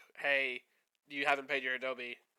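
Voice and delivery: ordinary talk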